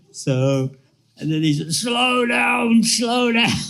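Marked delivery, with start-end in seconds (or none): 1.7-3.5 put-on American accent, very high and slow. Retelling what a man said after falling off a bunk, imitating Jai Pataki's American accent. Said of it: "with an American accent".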